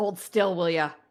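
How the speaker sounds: very loud, growling voice. Storyteller voicing a fighter who growls at the player: growling. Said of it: "he sort of grow- growls at you".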